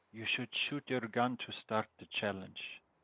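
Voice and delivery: hushed half-whisper under the breath. Speaking in the first person to a companion, half-whispering. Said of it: "I whisper to Brock".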